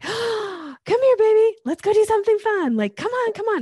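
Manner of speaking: bouncy, very high, loud, high-energy voice. Demonstrating how people talk to get a dog's attention, high-pitched high-energy fast talk. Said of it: "high pitched, high energy, kind of fast talk".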